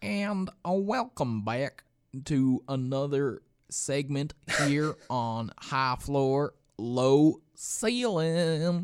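loud, very slow put-on Southern drawl. Welcoming listeners back to the next segment: put-on Southern accent. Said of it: "We kinda default to the Southern accent".

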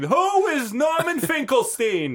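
very high, loud voice, pitch swooping wildly. Showing others how he would say his own name, in a Norman Finkelstein voice. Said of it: "Is how he would say it".

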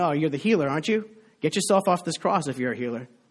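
ordinary talk

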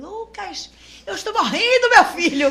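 theatrical wailing scream. Retelling a fall to the others, imitating own scream to a son. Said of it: "comecei a gritar".

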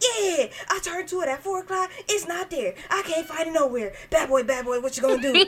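put-on rambling, fast-talking old man voice. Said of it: "he talking all fast".

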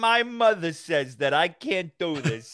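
slow, put-on Italian-accented storytelling voice. Describing versions people do, the speaker demonstrates one, an Italian accent impression. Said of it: "like an Italian accent".

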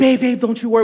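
sweet, small, comforting voice. Retelling how Shawnee reassured the speaker about missing online items: imitating Shawnee's sweet little voice. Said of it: "with her sweet little voice".

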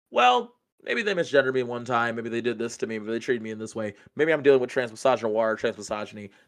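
ordinary delivery

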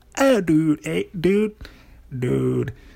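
laid-back, put-on surfer bro voice. Showing how the word dude sounds in their head: imitating a surfer bro. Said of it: "The way I say the word dude, it's like".

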